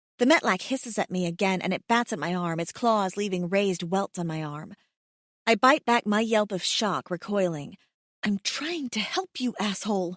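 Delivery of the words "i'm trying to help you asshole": low half-whisper under the breath. Scratched by a creature, the narrator half-whispers to it so the baby won't wake: half-whisper. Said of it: "I whisper".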